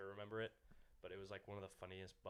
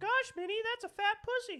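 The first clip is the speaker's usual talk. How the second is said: squeaked out, high-pitched and loud; 19 dB louder than usual. Asked by the others for impersonations, doing a Mickey Mouse voice. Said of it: "Your Mickey one was pretty good".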